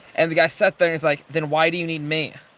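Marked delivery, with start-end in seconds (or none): none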